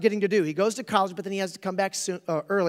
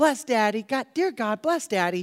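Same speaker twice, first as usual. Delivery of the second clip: put-on voice of a small girl; 2 semitones higher than usual. Retelling a Christmas movie, the youngest daughter prays for her father: baby Zuzu impersonation. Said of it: "the exact impersonation of baby Zuzu".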